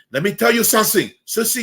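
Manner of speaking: put-on thick, heavy Puerto Rican accent, very high-pitched. Retelling how a man he used to mock talked, in a heavy Puerto Rican accent. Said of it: "he had a heavy Puerto Rican accent".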